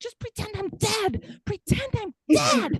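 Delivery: put-on exasperated yell. Speaker recreating how she yelled upstairs when frustrated, retelling own yelling. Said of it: "I'm yelling upstairs".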